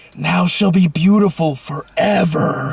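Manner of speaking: whispering, acted out. Retelling what you leaned over and whispered to him during a Disney movie, whispering. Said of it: "lean over and whisper".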